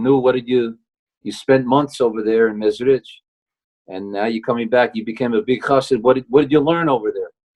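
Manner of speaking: mock dry, sarcastic needling tone. Retelling a father-in-law mocking his son-in-law's return: retelling a sarcastic question. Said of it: "So in a sarcastic way".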